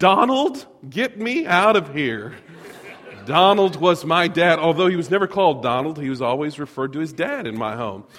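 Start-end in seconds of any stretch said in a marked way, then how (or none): 0.0-2.3 desperate, very panicked voice, words drawn out. Retelling what she said to the speaker's dad, imitating a panicked voice. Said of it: "she said in a very just panicked voice".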